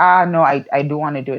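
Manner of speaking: mock upset, refusing tone. Speaker retells how he refused one more kiss in bed, retelling an upset refusal. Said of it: "then he gets really like upset".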